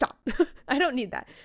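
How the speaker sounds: irritated, fed-up, annoyed tone. Retelling a book scene, quoting the annoyed heroine: imitating an annoyed character. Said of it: "she's kind of annoyed that she's like".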